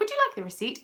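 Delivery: upper-class polite voice. Showing how she speaks when offering someone the receipt, in a posh voice. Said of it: "My normal posh way again".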